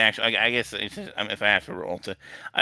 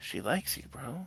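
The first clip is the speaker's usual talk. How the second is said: hushed, very quiet mutter under the breath; 3 semitones higher, 13 dB quieter than usual. Retelling a man's remark to the storyteller about a girl, said quietly under the breath. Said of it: "He kind of like says it quietly".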